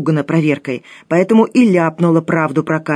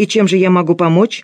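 plain

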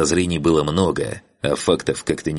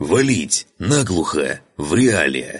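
growled out like an orc. An orc lieutenant speaks up: growled by an orc. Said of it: "прорычал орк".

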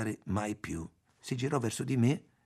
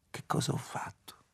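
hushed whisper, much quieter. Narrator reads May's line as she stares at the candle flame: whispered. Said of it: "bisbigliò".

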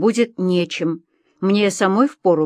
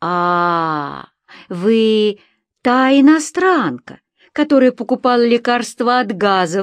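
delighted cry with a long drawn-out "a"; 3 semitones higher than usual. The narrator's pursuer recognizes her as the foreigner and exclaims; joyful exclamation. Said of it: "обрадованно воскликнул мой преследователь и засмеялся".

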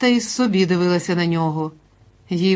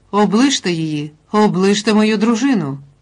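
full-throated, loud, bawling yell; 2 semitones higher, 4 dB louder than usual. A husband pulls his wife away from another woman, yelling. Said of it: "зарепетував Андрій".

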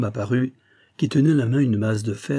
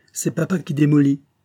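snide, sneering, snickering voice; 3 semitones higher, 3 dB louder than usual. A boy answers strangers asking about his father, sneering. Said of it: "ricana le garçon".

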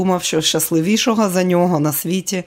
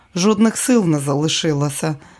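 plain

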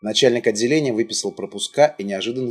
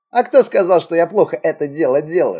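slyly amused, raised, high delivery; 7 semitones higher, 5 dB louder than usual. During a smoke break, the one called the cat answers a jab, sly smirking. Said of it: "лукаво усмехался сквозь дым кот".

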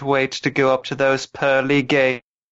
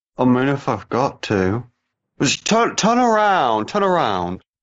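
animated voice with pitch swooping up and down. Joking about Dobby's last wish, speaking as Ron in a Ron impression. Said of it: "Is that your run, impression?".

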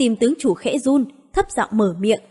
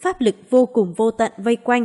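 usual speaking voice

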